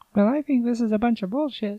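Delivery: very high, squeaking little voice. Quoting a movie character just grabbed by the testicles: high squeaky voice. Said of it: "he's all talking with a high voice".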